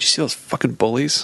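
angry, complaining tone. Retelling complaining to a roommate about some guys: imitating own angry complaint. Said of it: "I just was really angry".

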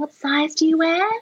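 very high-pitched shop-assistant voice. Speaker retells a sales assistant asking her size, high-pitched sales assistant impression. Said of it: "It's really high pitched".

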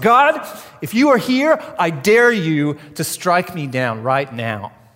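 drawn-out, slow, full-throated, loud yell. Retelling how a boy yelled from the middle of the road, retelling a loud yell. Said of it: "he would yell in a loud voice".

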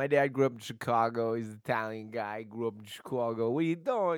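put-on New York accented speech. Telling a story about a father, slipping into a New York accent. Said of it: "I don't know why I'm using the New York accent".

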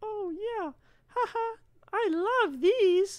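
very high, loud, silly squeaky puppet voice. Mocking younger people who smoke this stuff, in a Sesame Street puppet voice. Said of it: "Fucking puppets".

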